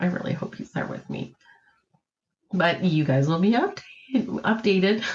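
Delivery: choked up, voice cracking and breaking with emotion. Telling viewers they really hope he'll be there with them, voice breaking. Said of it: "losing my voice. Sorry, um, very emotional".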